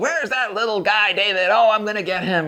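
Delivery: play-acted angry, blustering, very high. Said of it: "he's playing along as well".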